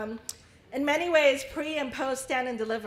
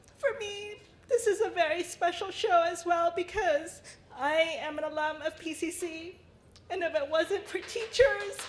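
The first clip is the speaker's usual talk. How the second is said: high, sobbing speech through tears; 6 semitones higher than usual. A pcc alum speaks about teachers at a special show, crying.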